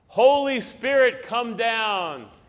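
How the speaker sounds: high, loud, dramatic preacher-style yell.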